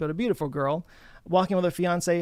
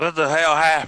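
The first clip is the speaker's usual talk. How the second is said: put-on drunken, dazed stupor voice; 7 dB louder than usual. Reading the line of an eighty-year-old man lying dazed on the ground, in a drunken stupor. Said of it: "looks up in a drunken stupor".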